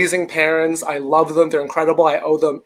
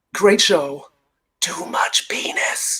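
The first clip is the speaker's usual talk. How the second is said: slow, hushed whisper; 4 dB quieter than usual. Retelling what dad whispered in one's ear after the show: imitating dad whispering. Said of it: "whispers in my ear".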